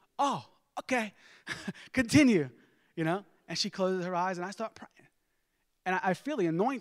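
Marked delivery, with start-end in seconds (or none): 0.2-2.5 put-on heavy Italian accent laid on thick, high and loud. Retelling praying over his grandma, giving her reply in a thick Italian accent. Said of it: "like a thick Italian accent".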